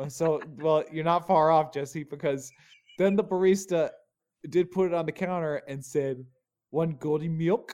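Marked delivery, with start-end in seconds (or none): 6.7-7.7 put-on cutesy baby-talk voice. Retelling what a barista said when serving the drink, imitating baby talk. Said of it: "Did you just baby talk me?".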